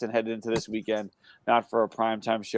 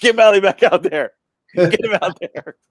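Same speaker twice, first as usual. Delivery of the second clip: very high, very loud screaming; 10 semitones higher, 9 dB louder than usual. Describing a fan still yelling at the TV in a lopsided game: imitating someone screaming at the TV. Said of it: "He's still screaming at the T V".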